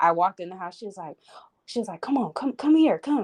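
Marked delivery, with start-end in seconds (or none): 2.0-3.2 eager, excited, pitched-up calling out. Retelling how she called the speaker in to show a gift, imitating an excited greeting. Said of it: "she was so excited to show me".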